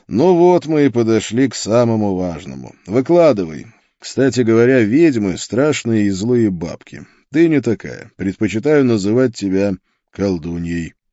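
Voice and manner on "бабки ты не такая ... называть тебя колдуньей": plain reading voice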